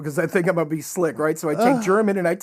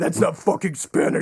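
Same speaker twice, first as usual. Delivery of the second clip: imitated angry reaction. Retelling how the old man reacted to his Spanish: imitating his old man getting pissed. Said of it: "he would get pissed".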